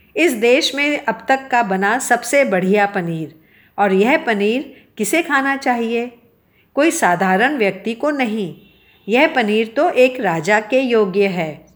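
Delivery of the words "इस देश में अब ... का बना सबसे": plain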